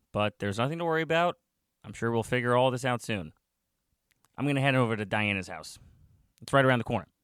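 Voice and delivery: ordinary talk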